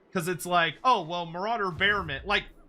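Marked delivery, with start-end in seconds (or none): none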